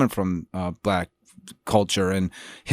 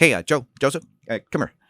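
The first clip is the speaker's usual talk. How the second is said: mock irritated, mad, pitched-up call; 5 semitones higher than usual. Retelling how the director called him over after a take: imitating Scorsese sounding mad. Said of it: "and he seemed mad".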